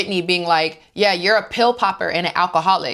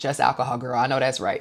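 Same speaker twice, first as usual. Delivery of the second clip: usual speaking voice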